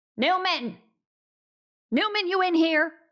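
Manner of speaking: very loud, high shouting yell. Narrating a game, the speaker voices the boss opening a guardhouse door: yelling. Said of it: "she yells".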